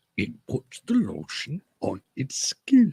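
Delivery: high, slow, drawn-out cartoon voice. Repeating a line in a put-on voice for a friend: Yoda-like voice. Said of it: "That's a good voice".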